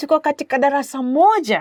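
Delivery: surprised pitch rise on final "moja". Teaching a Swahili sentence, the speaker demonstrates the voice rising at the end. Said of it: "you kind of raise your voice a little bit".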